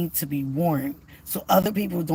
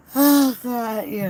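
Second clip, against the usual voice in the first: high, yawned-through words, talking through a yawn; 6 semitones higher, 3 dB louder than usual. About to go into a doctor's office, yawning while talking. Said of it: "I'm still yawning".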